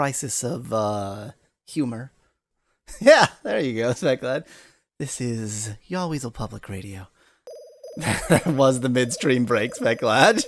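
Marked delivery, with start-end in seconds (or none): 5.0-7.1 mock soft ASMR voice, much quieter, lower. A streamer jokingly taking a midstream break, mock soft ASMR voice. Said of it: "I'm going to speak in ASMR voice now".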